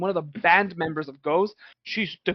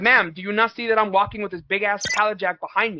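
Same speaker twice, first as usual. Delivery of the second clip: ordinary talk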